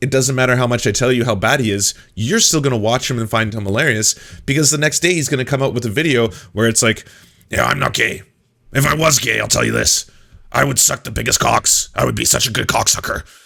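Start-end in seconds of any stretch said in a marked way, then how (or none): 7.5-13.2 put-on raspy ranting voice. Quoting a clip where Alex Jones brags: raspy Alex Jones voice. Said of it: "it's Alex Jones in his raspy voice".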